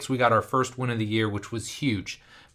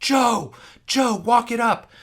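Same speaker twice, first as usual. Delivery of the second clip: mock very high, drawn-out top-of-the-lungs screaming; 12 semitones higher, 5 dB louder than usual. Speaker re-enacts yelling at a teammate during a close basketball game: retelling screaming at top of lungs. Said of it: "I'm like screaming at the top of my lungs".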